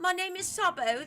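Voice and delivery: put-on British accent. Demonstrating their British accent to the other speaker, British accent. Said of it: "This is my British accent".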